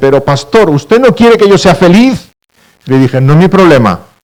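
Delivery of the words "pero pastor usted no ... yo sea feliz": high, tearful, angry voice, crying and cross. A pastor retelling a church sister's reply to him: imitating a tearful, angry woman. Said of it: "acabó llorando y enfadada me dice".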